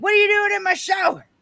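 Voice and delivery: high, loud, angry bellowing yell. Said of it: "He was very angry".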